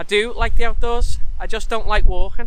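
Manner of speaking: emphatic, insistent delivery.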